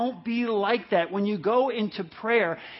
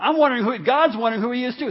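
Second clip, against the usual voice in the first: normal talking voice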